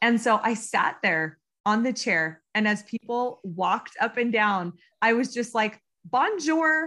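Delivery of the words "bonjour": put-on very American accent, pitched up. Sitting on a chair greeting people walking by: very american accent. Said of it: "with my very American accent".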